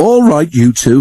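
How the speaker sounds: words through a laugh. Narrator reads Edward addressing the two engines Bill and Ben; laughing while speaking. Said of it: "laughed Edward".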